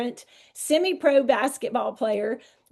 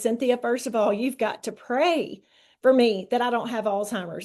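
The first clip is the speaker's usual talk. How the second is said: normal talking voice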